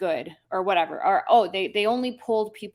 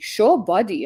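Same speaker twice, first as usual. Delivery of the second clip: put-on speaking with Middle Eastern accent; 6 dB louder than usual. Explaining how a name was read aloud: Middle Eastern accent. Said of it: "read it in that accent".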